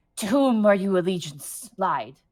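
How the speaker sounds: hostile, glaring were-rat man creature voice. Voicing a hunched were-rat questioning the players: glaring were-rat man. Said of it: "kinda glares at you and goes".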